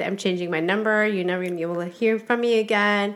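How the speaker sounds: ordinary talk, nothing marked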